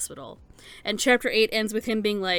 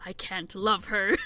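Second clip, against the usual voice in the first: acted muttering under breath. Discussing an anime scene, retelling a mutter under breath. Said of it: "I muttered under my breath".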